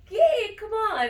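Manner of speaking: high, loud, excited cheer.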